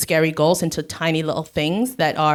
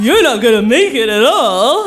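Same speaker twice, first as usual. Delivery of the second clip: ridiculous, goofy, taunting, high, loud put-on voice; 7 semitones higher, 10 dB louder than usual.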